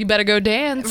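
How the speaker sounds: ordinary delivery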